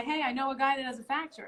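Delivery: ordinary talk, nothing marked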